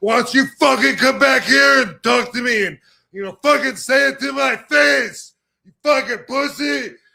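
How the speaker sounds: all-out, high, rough, furious raging scream. Describing anger taking over the body, acting out angry screaming. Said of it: "start fucking screaming".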